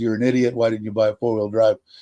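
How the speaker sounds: usual speaking voice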